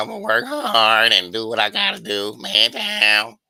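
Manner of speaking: loud, very slow crackling voice. Imitating Errol Spence talking about a comeback fight: Errol Spence crackling voice. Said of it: "show up with his lazy eye and crackling voice".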